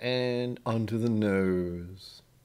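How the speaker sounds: slow, stretched put-on delivery.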